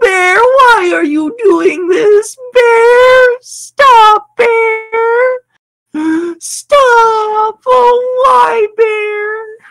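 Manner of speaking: very high, loud, wailing sobbing cry, "stop" stretched. Telling a story about a bear wrecking a woman's kayak, imitating her crying. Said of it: "you start to hear her cry".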